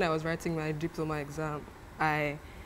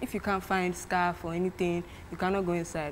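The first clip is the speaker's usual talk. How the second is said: plain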